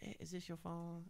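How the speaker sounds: put-on Mexican accent. Retelling what a lady in a mall asked: imitating a Mexican accent. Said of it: "she had the accent".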